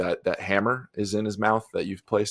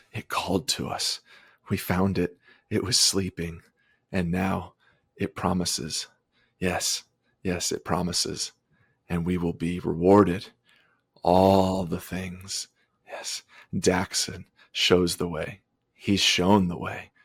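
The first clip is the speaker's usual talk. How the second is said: terrified, frightened muttering. Voicing a frightened man asked what he found, terrified muttering. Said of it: "looking at Harleth like terrified".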